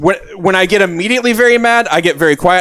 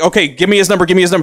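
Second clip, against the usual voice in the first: put-on furious, angry voice. Retelling pacing around the house after reading the texts: imitating own angry demand. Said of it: "I'm getting maybe the maddest of it".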